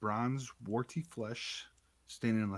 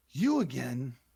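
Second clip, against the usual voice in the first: loud, hoarse, rasping creature bellow; 3 semitones higher, 6 dB louder than usual. A narrator voices a creature moving in the water, addressing you, hoarse bellow. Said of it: "it bellows in a hoarse voice".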